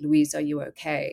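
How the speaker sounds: imitated choked-up voice. Speaker retelling her dad calling through the bathroom door, imitating a choked voice. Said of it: "like choked".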